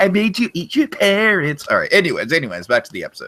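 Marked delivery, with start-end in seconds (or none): 0.0-1.7 high, pitched-up cartoon voice. Quoting a cannibal scene joke in a cartoon voice: Cartman voice. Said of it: "in the Cartman voice".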